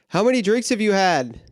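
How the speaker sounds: put-on, high-pitched yelling, acted out. Retelling an argument, the speaker acts out yelling at a guy: retelling a yell. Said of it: "I yell at this guy".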